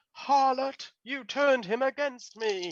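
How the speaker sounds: very high, shrill, sodden, sopping voice. Game master voicing the bridal spider accusing a party member, shrill, sopping voice. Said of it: "in a shrill, sopping voice is like".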